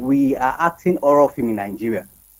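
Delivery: ordinary talk, nothing marked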